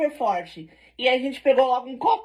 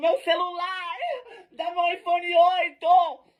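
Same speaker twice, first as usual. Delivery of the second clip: yelling in a higher-pitched voice; 6 semitones higher than usual. Retelling the friend shouting for a stolen phone: imitating a friend yelling. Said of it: "E a bicha gritando".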